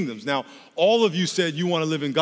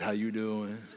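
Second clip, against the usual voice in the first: deep, very low, sultry put-on seductive voice; 7 semitones lower, 10 dB quieter than usual. Showing how the devil can sound tempting: imitating a sexy voice. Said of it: "the devil can disguise himself in a sexy voice".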